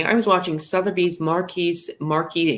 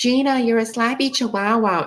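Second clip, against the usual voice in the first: put-on annoying high-pitched voice; 7 semitones higher than usual. Retelling the Gina and Bronwyn fight, imitating an annoying high-pitched voice. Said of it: "in that really annoying high pitched voice".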